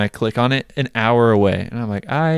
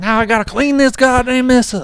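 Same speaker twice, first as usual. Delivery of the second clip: very high, put-on trailer-park southern twang; 14 semitones higher, 4 dB louder than usual. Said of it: "southern for some reason".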